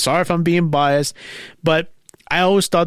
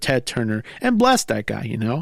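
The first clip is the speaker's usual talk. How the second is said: ordinary talk, nothing marked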